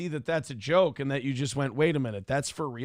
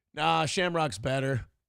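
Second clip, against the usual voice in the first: put-on unimpressed, indifferent tone. Retelling his son's reply about the park: imitating his son acting unimpressed. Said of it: "purposely being not impressed".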